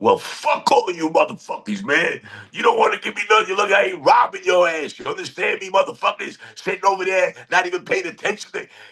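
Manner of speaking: very high-pitched, furious, cursing ranting tirade. Retelling the beggar turning on the train riders: imitating an angry outburst. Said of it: "he's going on and on".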